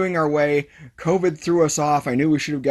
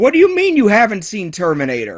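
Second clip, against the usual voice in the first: put-on loud screaming in a British accent; 6 semitones higher, 6 dB louder than usual. Retelling a man's reaction on a call about unseen Terminator films: retelling Miles screaming, British accent. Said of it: "screaming at me in his British accent".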